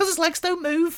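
put-on Liverpool Scouse accent, pitched very high. Retelling what a mother told her toddler, in a scouse accent. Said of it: "to like the Scouse".

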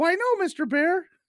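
very high, drawn-out little rabbit voice. Telling a joke about a bear and a rabbit, the speaker voices the rabbit: high rabbit voice. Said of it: "the rabbit always has a higher voice".

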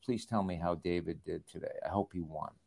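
hushed, very quiet, barely audible half-whisper. Retelling what Coach Shula half-whispered during a commercial break: imitating Don Shula half-whispering. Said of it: "he whispered in my ear".

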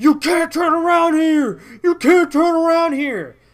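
shrill, very loud, high-pitched yelling. Retelling how people from the fire department came out at them, retelling a yell. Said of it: "they started yelling at me".

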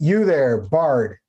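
calling out loudly. A mounted necromancer, about forty feet away, calls out to the bard: shouting. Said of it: "she shouts".

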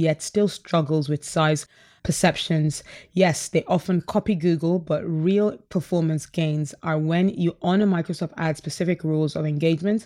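normal talking voice

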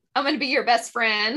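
usual speaking voice

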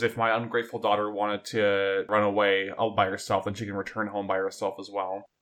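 plain

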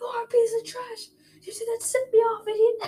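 mock very high-pitched, heated shouting. Retelling being fooled and sent off, yelling back at them: retelling a yell. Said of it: "I yell at them".

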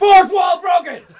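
very loud, very high-pitched shout. Shouting playfully about breaking the fourth wall: yelling. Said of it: "I'm yelling for no good reason!".

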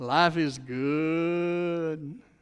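put-on Louisiana Cajun accent, "good" drawn out. Recalling a commercial, the speaker quotes a man in a Cajun accent. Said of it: "in a Cajun accent".

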